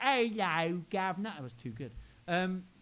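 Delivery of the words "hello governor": put-on, mock Cockney accent.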